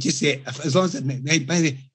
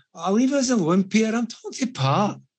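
put-on drunken voice, thick Scottish accent, higher; 8 semitones higher than usual. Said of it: "Absolutely out of it".

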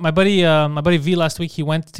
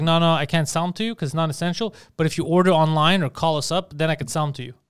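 ordinary talk, nothing marked

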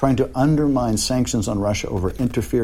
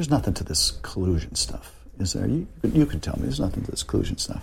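put-on conspiratorial tone, quieter; 5 dB quieter than usual. Recalling a stranger at an airport, the speaker quotes him, retelling a conspiratorial tone. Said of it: "in a very conspiratorial tone".

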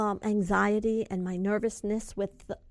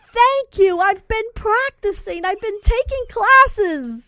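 put-on high, loud, slow, heavy Brooklyn accent. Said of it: "You actually sound like you're from Brooklyn".

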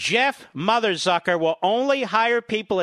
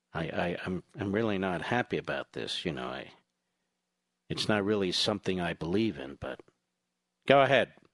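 mock-somber put-on voice, much lower; 14 semitones lower, 8 dB quieter than usual. Mimic Kasich speaking on the air about impeachment, imitating Kasich with much somber drama. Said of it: "Kasich says it with much somber drama".

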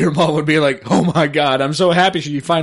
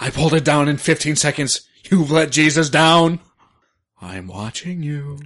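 talking in a dog character voice. In a two-person bit, one human and one dog, speaking in dog voice. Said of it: "You're going to do it with the dog voice".

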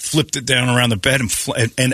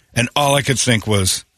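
usual speaking voice

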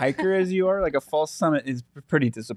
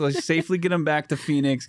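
ordinary talk, nothing marked

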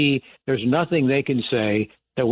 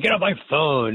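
yelling radio host voice; 2 semitones higher than usual. Retelling how Bob Grant answered callers: imitating Bob Grant yelling. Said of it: "he would yell and scream and say".

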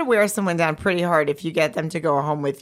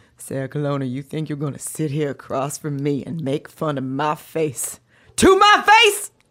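deep, low, deliberate, swooping, animated, dramatic, every word drawn out; 4 semitones lower than usual. Doing an impression of Angela Bassett scolding the other speaker: Angela Bassett impression. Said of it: "an impression of Angela Bassett talking to me".

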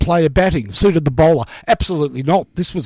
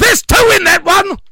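mock full-voice yell, very high and shrill; 5 dB louder than usual. Describing a keen fan at a ball game, retelling a fan's yell. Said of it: "he would yell at the top of his voice".

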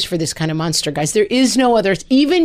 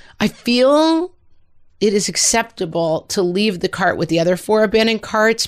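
plain

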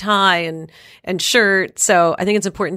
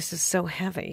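put-on girl's mutter, under breath, much quieter; 12 dB quieter than usual. Retelling what a girl said under her breath before a dance, imitating a mutter. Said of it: "I heard the girl say under her breath".

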